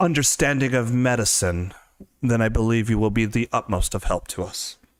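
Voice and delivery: mild, gently spoken voice. The temple's highest cleric answers a volunteer offering help, soft-spoken. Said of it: "Some people have soft-spoken voices, / you kind of pick out what would be probably the highest order cleric, the most well-dressed, actually looks even a little more smart than [name]. It's smartly dr".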